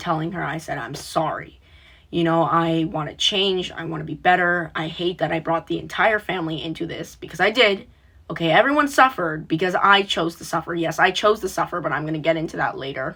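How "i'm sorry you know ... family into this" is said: ordinary delivery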